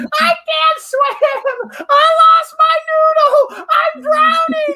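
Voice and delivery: put-on high, loud wailing like a crying three-year-old. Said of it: "turn into a three-year-old crying child".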